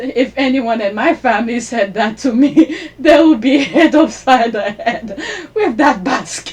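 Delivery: talking while cracking up with laughter. Reacting to a story about Kate and Megan, laughing while talking. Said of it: "I'm sorry, I'm laughing".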